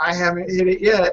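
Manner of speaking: put-on tipsy, drunk-sounding words broken by hiccups. Retelling what a woman holding onto the bar said, imitating a drunk woman hiccuping. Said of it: "and starts hiccuping again".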